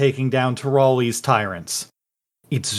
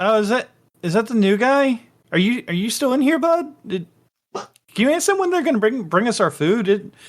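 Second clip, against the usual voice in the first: bewildered, unsure, confused character voice, pitched up; 9 semitones higher than usual. Narrator voicing an unseen speaker the listeners hear: confused-sounding voice. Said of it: "this kind of like confused sounding voice".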